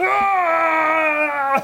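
distant, high creature screams of pain.

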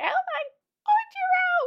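very high, lovestruck anime fangirl swoon. Describing girls cheering a fighter in an anime, swooning anime girl voice. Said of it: "such typical like anime girl swooning voices".

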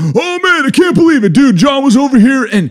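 very high, loud, casual shouted yelling. Retelling a man in a cafe talking on his phone: imitating someone yelling on phone. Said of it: "And he is like yelling".

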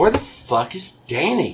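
slow, deliberate, dragged-out, demanding voice. Retelling what Rebecca said coming down the stairs: impression of Rebecca. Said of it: "That's a good impression of her".

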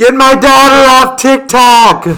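mock yelling. Describing how they read a man's all-caps messages, the speaker does mock yelling in his voice. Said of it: "like he's yelling it".

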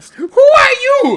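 astonished cry, very high, very loud, shrill. Reading a play, a character replying to a man who says he was her baby, amazed.

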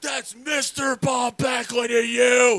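very high, shrill, in-your-face, drawn-out scream. Retelling how Bob Backlund got in his face at a signing, imitating him screaming. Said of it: "Screamed at me".

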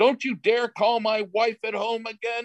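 mock hollering, voice way up high. Retelling how a man on crutches came up hollering at him: retelling someone hollering. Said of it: "he starts hollering at me".

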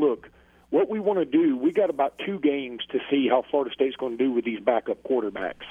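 ordinary delivery

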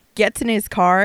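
ordinary talk, nothing marked

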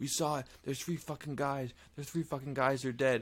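play-acted, high, frantic, panicked shrieking. Retelling a documentary story, the speaker acts out the frightened men: retelling panicked screaming. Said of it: "They're screaming".

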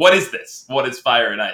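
put-on fed-up, irritated, exasperated tone. Retelling a TV scene where a character gets annoyed: imitating annoyed questioning. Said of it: "Schmidt's getting really annoyed".

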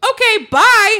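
brusque, curt, aggressive, very high and very loud. Retelling a date's reply when leaving: imitating an aggressive goodbye. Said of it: "It wasn't quite that aggressive".

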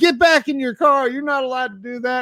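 very high-pitched, bossy, loud yell. Retelling being approached at a gas station: imitating someone yelling. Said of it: "He, like, yells at me".

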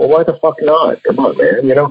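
mock annoyed outburst. The speaker retells his reaction to a man on the phone, retelling an annoyed outburst. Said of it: "I got a little pissed off and like".

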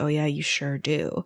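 soft throwaway mutter under the breath. Retelling what one guy muttered after a woman said she was busy, retelling a mutter. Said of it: "Brett mutters like".

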